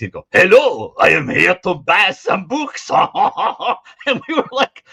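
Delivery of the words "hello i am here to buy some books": loud, exaggerated, over-the-top fake French accent. Imitating how a man they laughed at sounded: very fake French accent. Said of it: "He would sound exactly like this".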